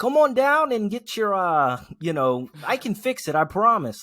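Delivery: very high, loud, shrill, swooping New Jersey pitchman voice. Imitating a mechanic in a TV commercial, New Jersey accent. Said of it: "some New Jersey man being".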